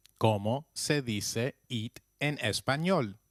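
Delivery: ordinary talk, nothing marked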